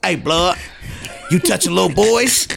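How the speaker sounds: fake menacing tough guy voice. Retelling pulling up beside a man and confronting him, putting on a scary guy voice. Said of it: "I just put my scary guy voice on".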